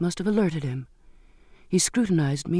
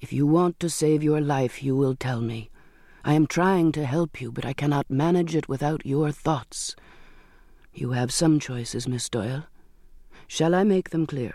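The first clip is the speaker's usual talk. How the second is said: usual speaking voice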